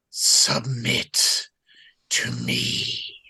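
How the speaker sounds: unnatural whispered voice with echo. Narrator voices a voice echoing in a listener's ears: unnatural echoing voice. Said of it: "You hear a voice that just echoes in your ears".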